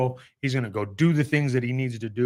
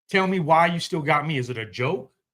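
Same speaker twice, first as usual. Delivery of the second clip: put-on angry yell, higher pitched; 4 semitones higher than usual. Retelling a past moment alone in a field, imitating his own yelling at God. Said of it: "I sat in a field yelling at him".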